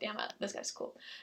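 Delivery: soft, unvoiced whisper. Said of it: "I was like".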